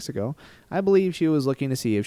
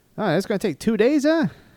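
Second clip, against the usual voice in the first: put-on Canadian accent, very high and loud; 12 semitones higher, 5 dB louder than usual. Quoting a woman's reply about a drive through Canada, in a Canadian accent. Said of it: "I just dropped that Canadian accent".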